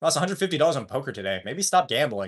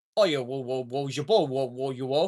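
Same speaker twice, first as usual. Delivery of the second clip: clumsy, bad, fake British accent; 4 dB quieter than usual. Speaker shows the closest they've ever gotten, a bad British accent. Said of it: "I'm not that good at a British accent".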